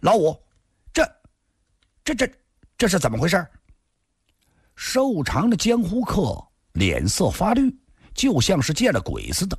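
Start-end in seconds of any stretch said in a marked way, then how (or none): 0.0-3.5 harsh, stern, sharp, high and rushed. The one-eyed woman turns on Lao Wu, speaking sharply. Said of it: "厉声地说".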